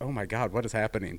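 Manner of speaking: ordinary talk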